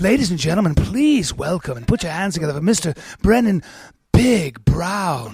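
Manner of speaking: seductive, sultry, building stage-announcer voice. Showing how the speaker would introduce a guest as an announcer, sexy announcer voice. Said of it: "I wish I could be an announcer".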